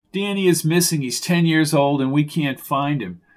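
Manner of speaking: ordinary delivery, nothing marked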